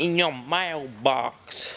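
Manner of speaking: clumsy, drawn-out, failed American accent. Repeating a phrase to listeners while attempting an american accent. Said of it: "I'm trying to do a US accent".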